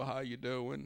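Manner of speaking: put-on, drawn-out American Southern drawl. Imitating a politician greeting people: imitating a Southern drawl. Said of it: "he had that Southern drawl".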